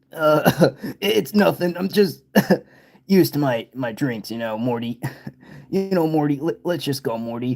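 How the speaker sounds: put-on drunk cartoon voice. Acting out a scene from the show: drunk Rick voice. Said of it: "you sound like you're, you're kinda drunk".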